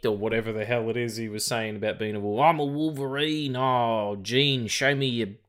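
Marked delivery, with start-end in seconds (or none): 2.4-5.3 put-on Australian accent, higher. Imitating the cartoon's Wolverine with an approximated Australian accent. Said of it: "someone trying to do an approximation of an Australian accent".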